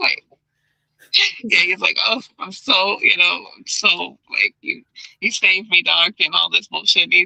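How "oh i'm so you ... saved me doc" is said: put-on weepy, remorseful, slow tearful gushing. Retelling the Joker pretending to cry to the doctor: Joker fake crying remorsefully. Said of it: "he's acting like he's crying and he's so remorseful".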